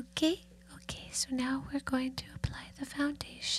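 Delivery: put-on whispery voice. Imitating how a woman applying makeup talks, soft whisper. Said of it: "she kind of talks like this".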